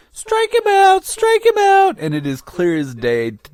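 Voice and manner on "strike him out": put-on girlish voice, much higher, louder, slower. Recalling what they called out from first base in a filmed baseball scene, 12-year-old girlish voice. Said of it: "my 12-year-old girlish voice going".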